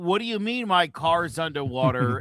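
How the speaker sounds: ordinary delivery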